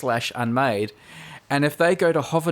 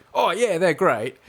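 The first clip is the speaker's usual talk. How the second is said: canned, stock ad-read delivery; 3 semitones higher than usual. Teasing the co-host about ad reads, imitating the co-host's reply. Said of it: "you go".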